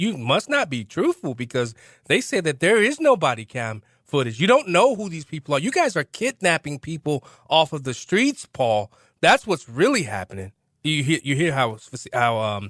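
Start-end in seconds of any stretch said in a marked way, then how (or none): none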